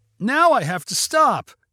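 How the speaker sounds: drawn-out cry. Colby, as a police car blocks the ice cream truck's path, crying out. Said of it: "cried Colby".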